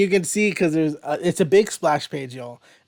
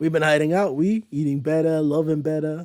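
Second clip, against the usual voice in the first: Bayou accent slipping into a Jersey accent. An actor tries the accent for a character: attempted Louisiana Bayou accent. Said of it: "it went into Jersey instead of Louisiana Bayou".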